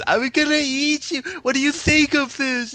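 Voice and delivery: strange, crazy, very high, loud monster voice. Recalling the funny monsters in a bloody series, in a crazy monster voice. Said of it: "strange, crazy monster voices".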